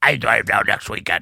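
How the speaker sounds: teasing, ribbing, poking-fun voice. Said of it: "That's my impression of Tim".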